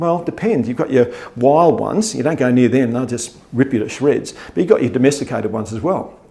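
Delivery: normal talking voice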